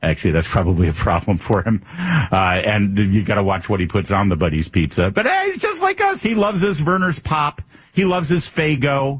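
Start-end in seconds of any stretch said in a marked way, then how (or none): 5.1-9.2 mock cheesy campaign ad voice, sold high.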